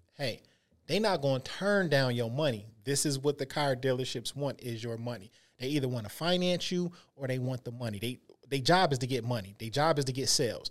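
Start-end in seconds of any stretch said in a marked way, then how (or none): none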